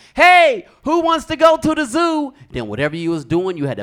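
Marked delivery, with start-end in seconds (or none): 0.2-2.4 yelling, very high and loud. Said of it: "my mom would just yell out".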